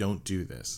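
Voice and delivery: soft, hushed delivery. Retelling a man's words to Jace after a pause, said quietly. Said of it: "And he says it quietly".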